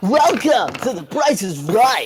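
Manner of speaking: game show announcer voice. Joking that a player sounds like a game show announcer: game show announcer voice. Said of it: "just about to announce, like, a game show".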